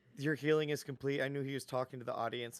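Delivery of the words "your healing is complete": plain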